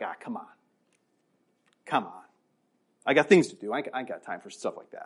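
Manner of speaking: dismissive shrug-off, low and quiet.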